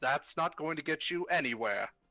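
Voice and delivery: amused chuckle while speaking. The steward watches a player try to kick the door, chuckling to himself. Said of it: "just kind of chuckles to himself".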